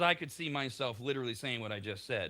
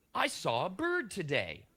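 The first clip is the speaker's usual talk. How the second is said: mildly excited, very slow, swooping and drawn out; 7 semitones higher than usual. Showing how to tell people something boring: mildly excited and enthusiastic. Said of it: "with a little bit of excitement, a little bit of enthusiasm".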